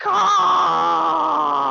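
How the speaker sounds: very high, endlessly stretched, creaky, rough caw. Voicing a bird squawking in a player's ear: slow long Dumb and Dumber-esque caw. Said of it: "the slowest, longest, like, Dumb and Dumber-esque way".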